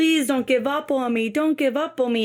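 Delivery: mock pleading, begging voice. Retelling a woman begging her doctor, imitating someone begging. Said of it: "and she's begging".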